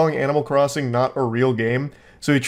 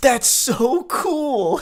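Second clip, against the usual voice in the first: put-on, very high, squealing, gushing, excited exclamation; 11 semitones higher than usual. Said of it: "I love that with the exclamation point".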